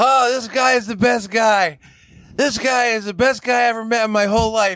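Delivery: put-on drunken, overboard, high gushing. Retelling how Ming overdid wingmanning a guy, imitating drunk Ming. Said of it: "in his very drunken stupor".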